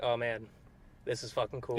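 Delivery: plain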